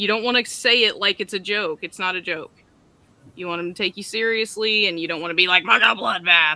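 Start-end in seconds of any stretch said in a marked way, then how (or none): 5.6-6.6 raving, maniacal, unhinged delivery. Showing how not to say a phrase in an appeal video: like a maniac. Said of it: "like a maniac".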